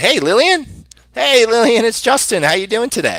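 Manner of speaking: bright, excited, eager voice, very high, swooping pitch. Demonstrating the right tone for a phone-call greeting: energetic and enthusiastic. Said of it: "you want to be energetic, enthusiastic, and excited".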